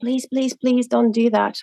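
put-on boy's voice, begging over and over, pleading. Retelling how a boy begged the speaker not to do something, imitating a boy pleading. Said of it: "he looked at me like pleading".

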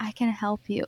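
mimicked quiet whisper. Describing a film scene in an elevator, re-enacting a character's whisper.

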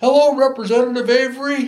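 loud, very high, ringing shout. Retelling how the speaker greeted him loudly: imitating someone shouting. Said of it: "And he shouted".

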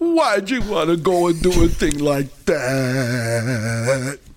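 tearful, sobbing, slow, weeping pleading delivery. Recounting a scene at the godfather's feet, imitating Klugman weeping. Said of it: "and he's weeping".

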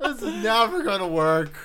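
high, loud, slow voice cracking in despair. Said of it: "My voice is cracking".

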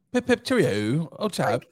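put-on, imitated British accent. Trying their hardest to do a british accent: imitated british accent. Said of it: "We are trying our hardest to have a British accent".

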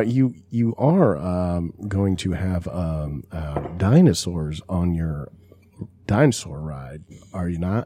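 deep, very drawn-out, slow delivery. Showing how a line from Jurassic Park sounds: Jeff Goldblum voice. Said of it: "When he's like".

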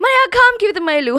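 very fast, high, comic chipmunk gabble in Gujarati.

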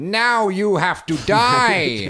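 very high, very loud, drawn-out silly cartoon voice. Showing a less fearsome way to say a threat: Hanna-Barbera cartoon character voice. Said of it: "like a Hanna-Barbera character".

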